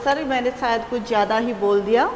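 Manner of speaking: plain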